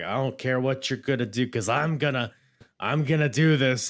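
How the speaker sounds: acted brash, swaggering, in-your-face cocky tone. Retelling Vince getting in Undertaker's face, imitating a cocky Vince. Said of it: "almost kinda cocky".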